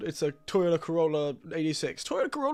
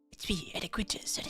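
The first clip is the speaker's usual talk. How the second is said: strange, breathy whisper-like voice; 10 dB quieter than usual. Suggesting a creature's voice to another speaker: weird whispery voice. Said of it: "a weird whispery voice".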